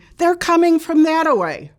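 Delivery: put-on high, rushed, hurried shouting. Speaker recalls a woman yelling as a train comes; imitating a woman yelling. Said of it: "and she's yelling".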